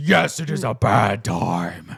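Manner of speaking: very slow dragon voice, every word drawn out. Narrating, the speaker voices Thrax as he looks over the listeners; Thrax's voice. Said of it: "Thrax now looks over you and goes".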